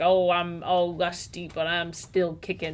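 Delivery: ordinary talk, nothing marked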